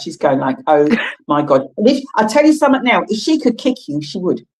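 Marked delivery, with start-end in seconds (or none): 0.7-1.7 mortified, utterly embarrassed outburst. Imitating the watching producer's reaction: imitating Shelley, mortified. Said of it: "absolutely mortified".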